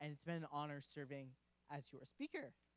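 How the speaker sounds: breaking, cracking voice mid-line. The speaker thanks members for their year before handing over the gavel, voice cracking. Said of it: "Wow, voice crack".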